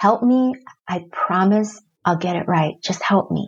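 ordinary talk, nothing marked

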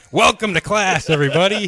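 put-on thunderous, booming voice. Imitating another speaker greeting a class: imitating a thunderous voice. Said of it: "with your thunderous voice".

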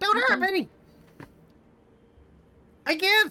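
very high, shrill, shrieking little fiend voice. Voicing a tiny beaten demon that begs not to be hurt: shrieking demon voice. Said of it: "it's gonna start shrieking".

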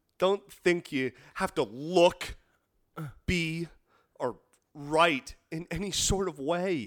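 theatrical, stagey, grand dramatic declamation. Giving a tip to aspiring playwrights, in a dramatic monologue. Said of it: "say this in your most dramatic monologue".

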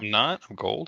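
disappointed, deflated, let-down tone. Told by a co-host that their Yahoo rating is gold, not platinum: disappointed. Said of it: "the disappointment in your voice".

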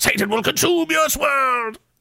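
very high, rising fury cracking the voice. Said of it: "so angry and emotional that his voice cracks".

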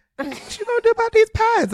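put-on girly voice up an octave, very high. Imagining an uncomfortable conversation, the speaker always goes with the sis girl: sis-girl voice. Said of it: "in that voice, you gotta take it up an octave".

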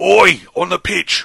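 gruff, loud, rough-edged barked call. Asked to do the voice, calling out as Roy Kent. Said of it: "That was also Roy Kent".

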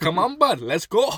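put-on Canadian accent. Picturing taking a rude guy outside, Canadian accent. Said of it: "so I will go Canadian on him".

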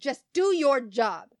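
loud, sharp, snapping delivery. Retelling a customer's words at the till: imitating a customer snapping. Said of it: "she snapped at me".

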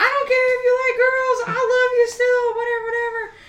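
put-on tearful crying voice, pitched very high. Acting out the mom at the airport, imitating someone crying.

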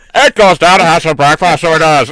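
loud, clearly put-on Northern Irish accent. Mocking a friend's bad impression: mocking Northern Irish accent. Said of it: "Sean Connery was from Northern Ireland".

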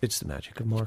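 deadpan and nonchalant. Saying Marco's catchphrase to John, deadpan and nonchalant. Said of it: "Got to say it very deadpan and nonchalant".

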